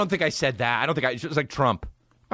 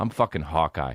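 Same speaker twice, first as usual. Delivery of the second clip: mock muttering under breath, lower; 9 semitones lower than usual. Retelling a made-up scene, imitating a quiet mutter. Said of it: "he doesn't say it loud enough".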